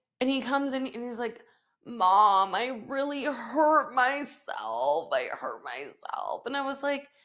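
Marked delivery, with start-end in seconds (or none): 1.9-6.4 near tears, very slow and drawn out. A mother retells her son coming in hurt, imitating him about to cry. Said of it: "he's like about to cry".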